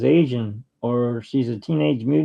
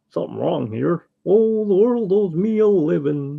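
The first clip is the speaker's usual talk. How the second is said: silly cartoon dog character voice; 4 semitones higher than usual. Listing cartoon voices they can do, the speaker shows off a Goofy voice. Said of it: "So I can do Goofy's voice".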